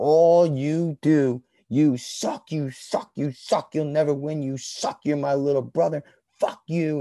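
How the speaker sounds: put-on high, furious, all-out raging screaming. Retelling how he screamed at the Jets players from the sideline: imitating his own screaming. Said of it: "I screamed at all those assholes".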